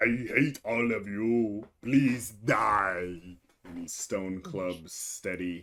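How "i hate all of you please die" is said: slow grumbling monster voice, "die" stretched out. Running the Fomorian's turn in the game, speaking in a grumbling Fomorian voice. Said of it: "he grumbles".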